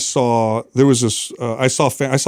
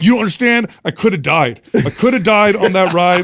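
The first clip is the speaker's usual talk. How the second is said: put-on high, mad little-kid voice, childish. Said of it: "He's like".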